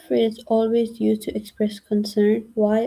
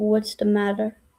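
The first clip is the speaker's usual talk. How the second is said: ordinary talk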